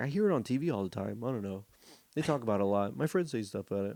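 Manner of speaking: normal talking voice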